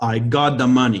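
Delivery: put-on French-Canadian accent. Retelling a man's first words on a phone call from Montreal; thick French-Canadian accent. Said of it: "French-Canadian accent says".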